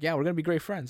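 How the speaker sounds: normal talking voice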